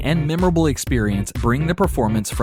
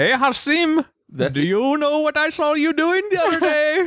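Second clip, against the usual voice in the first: very high-pitched, fake put-on Indian accent; 14 semitones higher than usual. A speaker addresses a friend during a bit, fake Indian accent. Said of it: "You sound like Indian Lucky Charms".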